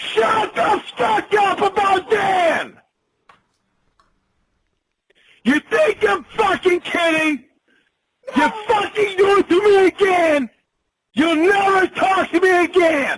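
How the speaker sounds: throat-straining furious yelling, very high and loud. Screaming at someone who keeps provoking him, furious rage shouting. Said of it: "that is literally hurting his throat".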